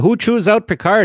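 put-on Canadian accent.

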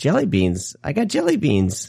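put-on high, sing-song, chattering three-year-old voice. Speaker retelling what a three-year-old said while splashing around, imitating a three-year-old. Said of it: "he's splashing around and he says".

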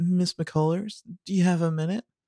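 put-on small victim voice, very high and pitiful. Recapping a scene, voicing Addison approaching Miss McCullers: Addison Derringer's victim voice. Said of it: "Addison's going to do a little victim voice here".

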